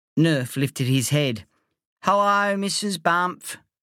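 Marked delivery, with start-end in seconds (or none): 2.0-3.5 wheezing, higher and slower. Lying on the doormat, a friend greets the narrator's mum, wheezing. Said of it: "he wheezed".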